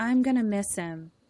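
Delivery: acted-out deadpan, flat monotone with no feeling. Retelling a movie scene where a character speaks: imitating an emotionless delivery. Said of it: "no emotion".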